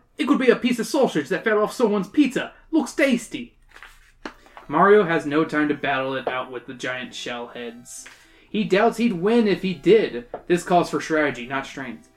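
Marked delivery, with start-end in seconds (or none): 0.2-3.5 put-on Australian accent. Reading a Boomerang Brother's line aloud: put-on Australian accent. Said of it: "I'm gonna give him an Australian accent".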